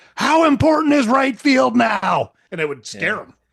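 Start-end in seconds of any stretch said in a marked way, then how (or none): 0.2-2.4 very high, shrill, full-throated top-of-lungs yell. Speaker recalls hitting a ball and yelling as it flew, retelling a top-of-lungs yell. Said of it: "yell at the top of my lungs".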